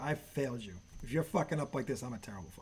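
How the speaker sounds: scolding, ranting voice. Retelling what a father said after a child's stupid mistake: imitating dad scolding. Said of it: "He's like".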